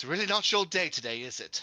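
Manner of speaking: light, playful, mocking taunt. Taunting a cornered enemy in character: smiling while taunting. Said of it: "just smile at this one and be like".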